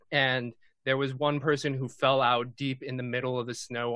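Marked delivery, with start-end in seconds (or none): none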